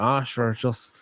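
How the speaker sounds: put-on modest, downplaying tone in a Northern Irish accent. Showing how people from Northern Ireland downplay praise, imitating Mickey Smith, Northern Irish. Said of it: "And Mickey be like".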